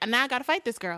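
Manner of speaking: lovestruck, head-over-heels smitten voice. Acting out what Shannon, in love, will say: imitating Shannon. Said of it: "And Shannon, in love, she's just gonna be like".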